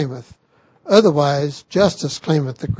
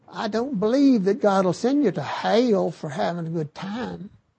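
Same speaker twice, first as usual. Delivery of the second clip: overdone, exaggerated Southern US accent, softer; 4 semitones higher, 6 dB quieter than usual. Quoting a popular entertainer heard on television, in an exaggerated southern accent. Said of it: "in her exaggerated southern accent".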